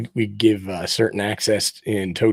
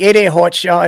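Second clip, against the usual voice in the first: put-on Boston accent, high, grating, much louder; 10 semitones higher, 8 dB louder than usual. Recalling a guy who called everybody hot shot, in a high-pitched Boston accent. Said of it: "with a Boston accent".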